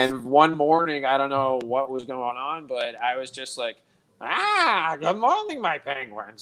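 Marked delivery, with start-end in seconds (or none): 4.2-6.4 high, swooping put-on character voice. Retelling greeting her penguins one morning: put-on character voice. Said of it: "ever since I started doing that voice".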